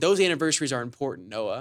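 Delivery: mock bone-dry, completely serious deadpan delivery. Retelling how he missed the joke and answered: imitating a deadpan reply. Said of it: "deadpan just didn't recognize it".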